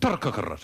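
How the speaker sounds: incredibly fast, rattled off in one blur. Showing one heard variant of saying a name: incredibly fast. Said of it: "you say it incredibly fast, like".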